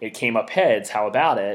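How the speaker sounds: ordinary delivery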